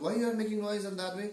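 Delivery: high, fast shouting. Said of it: "he shouted".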